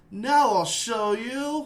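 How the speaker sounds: flat, affectless acted voice. Imitating a game voice actor's line with zero emotion: emotionless Steve Blum as Goku. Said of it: "zero emotion when he played Goku".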